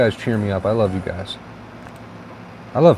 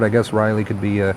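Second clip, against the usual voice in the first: ordinary talk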